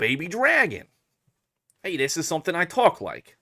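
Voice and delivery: high anime-character voice. Checking a voice given to a game character: Joey Wheeler voice. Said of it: "a Joey Wheeler voice".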